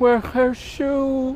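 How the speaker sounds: very high, besotted, lovestruck fool voice. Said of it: "He's a fool, uh, but he's a fool in love".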